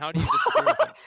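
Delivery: high, loud, laughing, incredulous tone.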